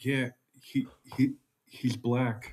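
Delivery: soft, slow whisper. A truck driver retells what a woman told him about the regular guy: retelling a whisper.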